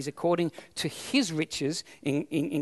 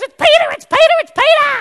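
put-on little girl voice, very high, very loud, excited squeal; 16 dB louder than usual. Retelling the story of the girl who hears Peter at the door, mock-excited little girl. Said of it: "All excited".

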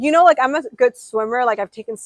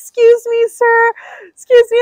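loud, frantic, panicked yelling; 12 semitones higher, 7 dB louder than usual. Retelling calling to a boat captain from the water: imitating own past screaming. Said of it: "literally screaming at the captain of the boat".

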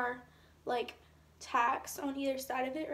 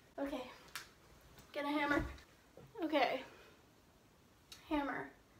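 breathless, out of breath, much quieter; 5 dB quieter than usual. Speaker about to fetch a hammer to pull stuck pieces out, out of breath. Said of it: "I'm out of breath".

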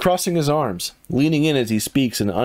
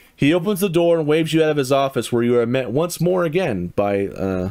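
ordinary delivery

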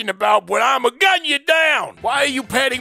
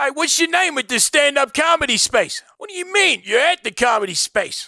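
cartoonish animal character voice, like a raccoon; 3 semitones higher than usual. A raccoon character answers another character, in a cartoon raccoon voice. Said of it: "why do you sound like a cartoon character".

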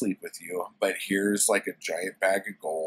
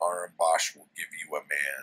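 mock fed-up, indignant, angry, pissed-off tone; 3 semitones lower, 3 dB quieter than usual. Retelling a story scene where Conan is furious: imitating an angry Conan. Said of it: "all pissed off".

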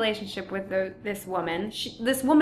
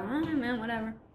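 lazy, indifferent, couldn't-care-less tone; 8 dB quieter than usual. Showing how to play someone who never cares: lazy, indifferent. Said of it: "He doesn't ever care about anything".

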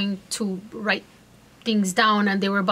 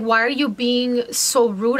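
usual speaking voice

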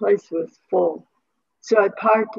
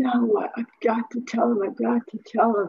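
mock sobbing, bursting into tears mid-sentence; 3 semitones higher than usual. Retelling a phone call where the man said wrong number, retelling own tearful outburst. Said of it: "I just burst into tears going".

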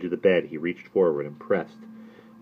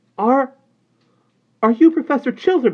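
scared, shrill, very high, very loud, drawn out; 10 dB louder than usual. Reading a story aloud, the nurse steps forward to question the professor, frightened voice. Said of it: "she asked in a frightened voice".

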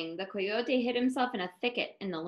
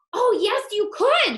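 very high-pitched, loud, eager outcry; 10 semitones higher, 5 dB louder than usual. Borreguita answers the coyote, who is about to eat her: crying out. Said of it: "cried Borreguita".

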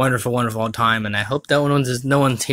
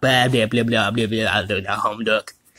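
put-on stuttering cartoon pig voice. Doing a bit about Bah Humbug Duck: Porky Pig voice. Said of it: "it sounded like Porky just now".

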